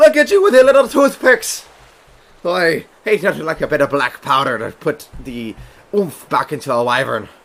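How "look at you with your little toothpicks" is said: shrill, very high, loud holler. Voicing a pirate who mocks the militia from afar: yelling in character. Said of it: "He yells now outwardsly towards them".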